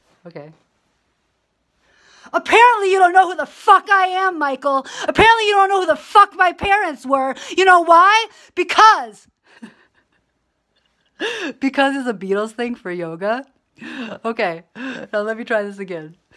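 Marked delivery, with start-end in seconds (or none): 2.4-9.3 high, loud, mock furious ranting. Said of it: "This is my impersonation of if I acted the way that you act".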